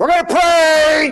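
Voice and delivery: very high, loud big voice, last word stretched. Retelling how his brother called everyone to prayer at an outing, retelling a big voice. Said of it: "Big voice".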